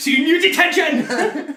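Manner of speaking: put-on very loud, very high, botched Welsh accent, shouted. Imagining a former head teacher's promo: bad Welsh accent as Eddie Dennis. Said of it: "I just murdered a Welsh accent there".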